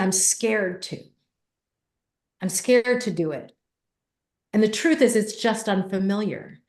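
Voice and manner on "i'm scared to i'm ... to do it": ordinary delivery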